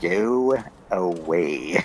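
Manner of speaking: dopey, goofy, over-silly put-on delivery. Retelling how the game's main character says a line: imitating a silly line read. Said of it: "this guy has to say it more silly-like".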